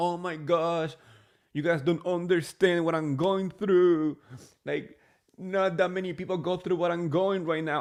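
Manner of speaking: put-on tearful, sobbing, self-pitying crying voice. Retelling what Jen Shah said on the yacht: imitating Jen Shah crying. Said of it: "she's crying and she's saying".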